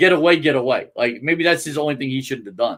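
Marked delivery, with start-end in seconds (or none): none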